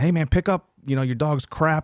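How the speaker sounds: acted, shouted, yelling, scolding delivery. Retelling a film scene where a stranger yells at a runner, retelling a yell. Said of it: "yells at Jason".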